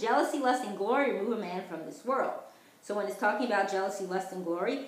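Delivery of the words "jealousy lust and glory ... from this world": normal talking voice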